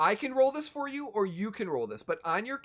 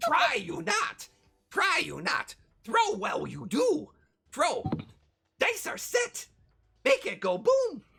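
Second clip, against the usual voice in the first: very high, slow, swooping character voice; 10 semitones higher, 3 dB louder than usual. Channeling Yoda in the game to help a throw: Yoda voice. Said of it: "my Yoda's".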